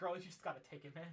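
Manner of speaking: urging, encouraging goddess voice. Voicing the goddess Eldath up above, urging Kalia: urging. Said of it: "Eldath up above just said".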